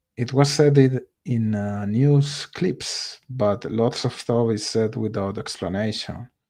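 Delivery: ordinary talk, nothing marked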